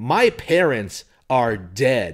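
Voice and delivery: boisterous, flamboyant, hammy, very drawn out. Retelling a character's answer about his parents: boisterous flamboyant delivery. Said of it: "in his typical, like, boisterous, like, flamboyant way".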